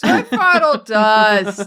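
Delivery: loud, slow New York accent, "dust" dragged out. Playing a New Yorker stuck in traffic, New Yorker accent. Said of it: "It's a New Yorker in traffic".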